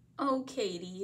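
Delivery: ordinary delivery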